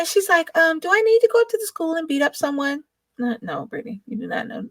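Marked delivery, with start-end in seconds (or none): 0.6-2.8 mock, sugary-sweet, pitched-up voice. Retelling what Brittany asked about the school, imitating a sweet voice. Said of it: "she says it in this voice".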